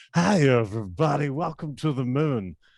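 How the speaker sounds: slow, drawn-out ballgame announcer voice. A big fan recalling a Saturday Night Live bit they love, do a Harry Caray impression. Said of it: "I was a big Harry Carey fan".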